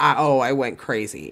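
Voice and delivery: normal talking voice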